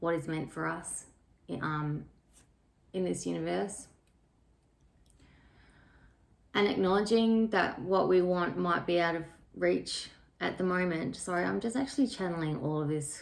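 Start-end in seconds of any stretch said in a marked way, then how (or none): 0.0-11.1 slow, unhurried, searching for each word. A speaker channeling a message, trying to find their words, talking slowly. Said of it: "so I'm talking a little bit slowly".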